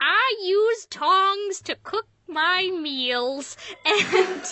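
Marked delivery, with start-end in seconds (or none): 0.0-3.6 put-on very slow, high-pitched little old lady voice. Quoting a line from an early web cartoon commercial, in an old woman voice. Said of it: "there's this old woman voice that says".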